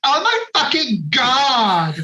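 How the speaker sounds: put-on very slow, drunk Valley girl voice, "God" drawn out. Imagining a drunk actor on set, imitating Tara Reid Valley Girl. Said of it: "her Valley Girl accent".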